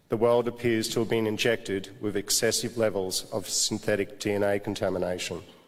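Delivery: ordinary talk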